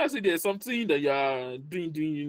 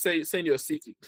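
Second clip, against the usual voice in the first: plain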